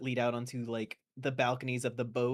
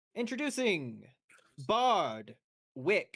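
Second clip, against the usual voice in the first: grand sing-song announcer voice, drawn out; 7 semitones higher than usual. Voicing an announcer who introduces a guest: announcer voice. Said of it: "the announcer goes".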